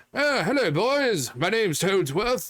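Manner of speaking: high-pitched, proper-sounding voice. Showing how a video game character sounds: proper Toadsworth voice. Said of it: "it kinda sounds more like".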